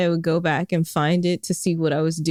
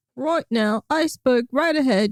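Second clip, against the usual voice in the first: fake British accent, pitched up; 7 semitones higher than usual. Chatting on a podcast, doing a fake British accent. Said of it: "a British accent".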